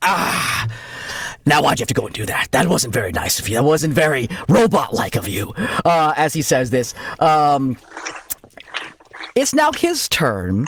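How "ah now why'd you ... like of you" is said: low, in-character creature voice. Voicing a creature that reassembles after being cut apart: gm voicing a regenerating creature. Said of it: "and he's like".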